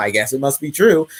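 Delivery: plain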